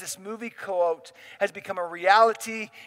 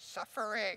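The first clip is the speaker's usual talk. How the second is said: breathy, whispered character voice; 14 dB quieter than usual. Speaker announces an impression, then says one word as Yoda voice. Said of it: "Let me do my Yoda voice".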